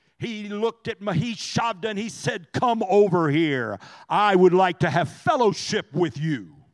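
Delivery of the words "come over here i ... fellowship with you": sinister, menacing, low evil tone. Retelling what a man said to another man, imitating an evil tone. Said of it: "in an incredibly evil tone".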